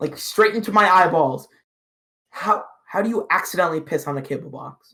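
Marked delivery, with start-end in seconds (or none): 2.3-4.9 put-on deadpan, dead-serious tone, quieter. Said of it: "cold, dead stare".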